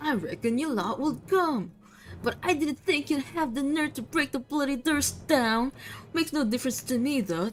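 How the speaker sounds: angry-sounding voice. Voicing her lines, made to sound angry. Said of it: "I'll just make her sound angry".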